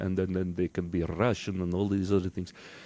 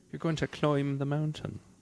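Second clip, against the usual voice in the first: high Irish accent, climb said as cloimb; 6 semitones higher than usual. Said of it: "if you're trying to sound Irish".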